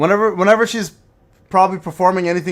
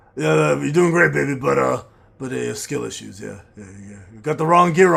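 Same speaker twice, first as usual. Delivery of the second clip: put-on heavy smoker voice, lower; 4 semitones lower, 4 dB quieter than usual. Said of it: "Ryan sounds like a heavy smoker".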